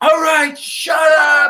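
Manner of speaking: put-on, high-pitched, drawn-out holler. Recalling a woman smacking the table at kids who weren't listening, imitating someone yelling. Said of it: "she just smacks the table and yells".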